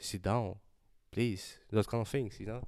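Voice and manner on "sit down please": firm, commanding, dominant, calm, unhurried. Showing how to be dominant with a calm voice: calm but dominant. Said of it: "very dominant with a very calm voice".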